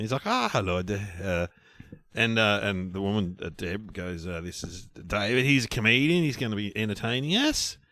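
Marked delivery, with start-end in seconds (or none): 0.2-1.1 imitated Swedish man's accent. Retelling being introduced to a Swedish man, imitating Lars's Swedish accent. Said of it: "Can we do a Swedish accent?".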